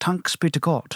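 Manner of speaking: bad put-on Irish accent. Quoting a saying from Ireland in a bad Irish accent. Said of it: "As they say in Ireland".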